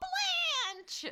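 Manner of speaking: very high, excited squealed cheer. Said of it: "I was all".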